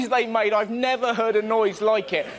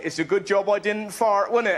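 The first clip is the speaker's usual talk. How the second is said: ordinary talk, nothing marked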